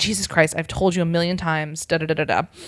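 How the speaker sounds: ordinary talk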